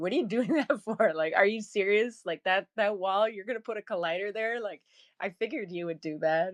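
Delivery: put-on snarky, needling, sarcastic AI voice. Imagining Spongetron watching someone work in Blender: mock-sarcastic Spongetron voice. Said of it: "he's programmed to be kinda sarcastic".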